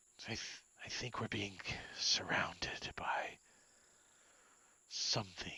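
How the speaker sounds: wary, growling whisper under the breath. Game narrator voices Azaka whispering over to the others. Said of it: "she whispers over".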